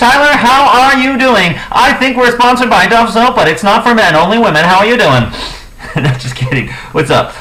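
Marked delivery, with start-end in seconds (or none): 0.0-5.2 put-on very high-pitched, old-timey vintage radio announcer voice. A podcast host greets their co-host Tyler in an old-timey radio announcer voice. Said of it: "This is my old-timey radio voice".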